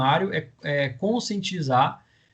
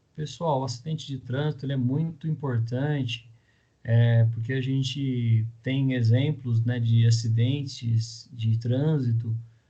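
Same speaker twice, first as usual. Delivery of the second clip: subdued, held-back, flat, low-energy delivery with no push; 3 semitones lower than usual. Showing a weak way to open a traffic-accident awareness campaign: low-energy, unemphatic delivery. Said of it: "com uma voz é, dessa, né, menos enfática, com uma voz é, mais aprisionada".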